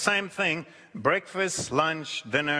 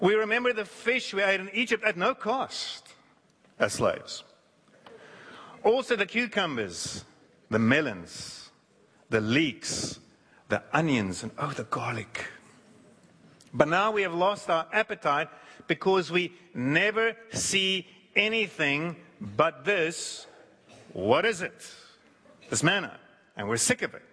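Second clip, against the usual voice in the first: ordinary delivery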